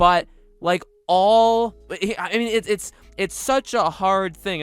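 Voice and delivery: stuttering ramble. Speaker admits going off track mid-point: stuttering. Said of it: "I know I'm already I'm stuttering".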